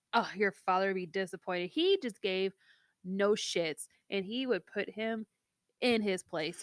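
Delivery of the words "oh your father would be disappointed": ordinary talk, nothing marked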